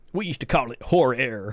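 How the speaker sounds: put-on old-timer style Texan accent. Speaker quoting an old-timer, in his Texan accent. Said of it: "in his Texan accent".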